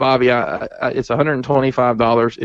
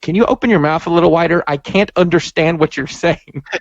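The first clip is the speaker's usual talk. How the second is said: high-pitched, snarky, sarcastic, snippy tone; 5 semitones higher than usual. Speaker quotes a movie scene of the character answering a kid: mock-snarky Willy Wonka impression. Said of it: "He's so snarky".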